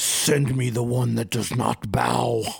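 grand disembodied voice surrounding the listener. Narrating a scene to the listener, a surrounding voice calls out booming. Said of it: "you hear a booming voice".

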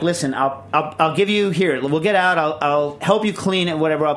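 ordinary talk

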